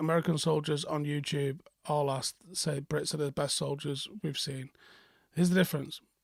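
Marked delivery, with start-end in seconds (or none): none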